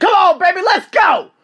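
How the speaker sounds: very loud, shrill, high-pitched scream. Recounting running in Thailand, he reenacts screaming at himself. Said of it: "I'm screaming at myself".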